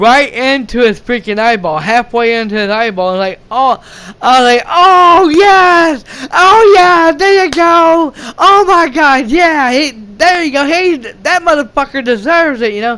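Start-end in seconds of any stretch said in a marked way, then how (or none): 4.7-12.7 acted, excited, high, drawn-out cheering. Retelling watching a film scene, imitating own cheering. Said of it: "I was really getting into it".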